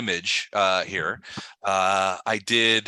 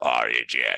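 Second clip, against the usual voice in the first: very low, very deep, demon-like voice; 10 semitones lower than usual. Acting out how he talks to you guys, in a demonic voice. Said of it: "It's it's a demonic voice".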